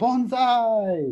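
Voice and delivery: mock booming, high yell, "bonsai" stretched out. Retelling a movie scene where the character shouts a word: imitating a yell at the top of his lungs. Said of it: "And at the top of his lungs".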